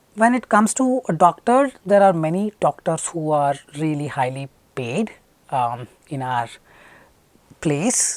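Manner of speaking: slow, measured, deliberate, unhurried pace. Demonstrating how to speak slowly for fluency marks, with a slow deliberate pace. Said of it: "I am trying to be go trying to be slow".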